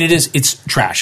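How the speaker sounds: usual speaking voice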